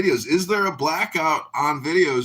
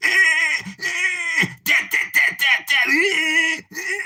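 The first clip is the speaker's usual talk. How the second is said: slow squeaky babble, very high, drawn-out nonsense syllables; 3 dB louder than usual. Quoting a Clubhouse comedian to the room: Pepe impersonation. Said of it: "that's my Pepe impersonation".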